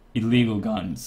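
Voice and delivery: voice cracking. Insisting to others he won't get banned, with a voice crack. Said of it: "voice crack".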